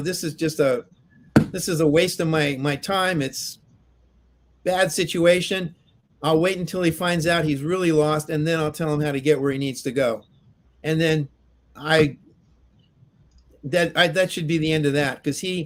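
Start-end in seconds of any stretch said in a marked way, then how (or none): none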